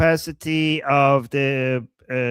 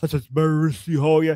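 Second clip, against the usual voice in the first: overblown, cartoonish, epic-sounding announcer-style delivery. Imitating how a man in the video talks: imitating cartoon-character speech. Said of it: "He's like".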